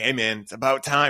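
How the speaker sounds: heavy, thick, exaggerated put-on Boston accent. Describing a friend's hot dog party messages, the speaker quotes him: imitating a thick boston accent. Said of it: "he's got a thick Boston accent".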